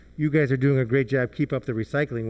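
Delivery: ordinary talk, nothing marked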